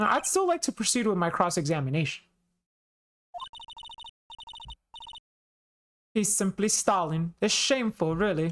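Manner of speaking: performed, animated character voice with wide, swooping pitch. Reading a game prosecutor's lines aloud: Von Karma voice. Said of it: "I love your Von Karma voice".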